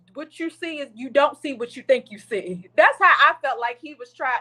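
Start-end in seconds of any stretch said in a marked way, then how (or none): none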